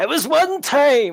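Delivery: very high, loud, distant shout. Telling a party game story, the speaker acts out a reply from the pool, retelling a distant shout. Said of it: "you hear Robert shout from the pool".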